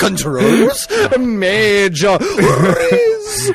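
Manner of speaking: high, slow, laughing, drawn-out mock kid hype voice. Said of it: "what does Gen Alpha sound like".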